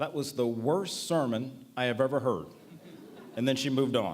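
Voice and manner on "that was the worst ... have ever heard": ordinary talk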